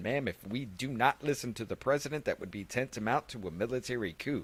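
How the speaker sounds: plain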